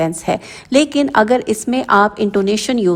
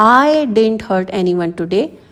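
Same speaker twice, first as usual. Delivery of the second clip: I slightly emphasized. English lesson on sentence stress: stress on the word I. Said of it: "इसमें आई पर stress देना है".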